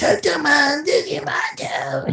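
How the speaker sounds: very high-pitched, worn-out, tired voice. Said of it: "before your voice starts going out".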